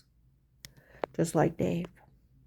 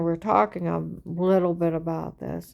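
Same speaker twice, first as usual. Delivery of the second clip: plain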